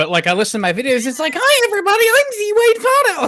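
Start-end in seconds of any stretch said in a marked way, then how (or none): 1.4-3.3 feeble, wimpy, very high little voice. Speaker imitates how his own voice sounds in his videos, mocking own wimpy voice. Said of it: "such like a wimpy voice".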